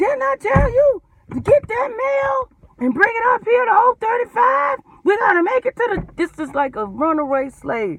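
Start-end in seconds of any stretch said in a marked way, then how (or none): 0.0-6.1 shrill, very high-pitched, scolding, bawling scream. Recounting what someone shouted at them about the mail, imitating someone screaming. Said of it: "ain't never heard nobody scream at".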